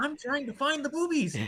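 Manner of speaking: very excited shouting. Retelling an old birder's question to a young man: imitating a super excited man. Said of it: "super excited".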